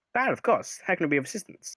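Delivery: put-on slight German accent. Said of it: "You're slightly German for some reason".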